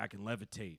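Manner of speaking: put-on drunken voice. Retelling what a drunk, pilled-up former boss would say: imitating a drunk boss. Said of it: "he'd get real drunk, kinda, like, pilled up".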